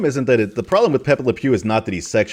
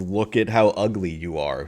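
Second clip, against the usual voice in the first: ordinary talk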